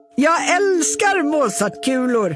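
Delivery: calling out loudly. Narrating a story, the grandfather character calls out his line: calling out. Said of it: "ropar farfar Nicodemus".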